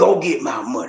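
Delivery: put-on bossy demanding voice. Acting out a girlfriend ordering her partner: imitating a bullying, demanding voice. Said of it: "That bullying, demanding, controlling".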